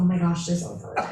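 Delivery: normal talking voice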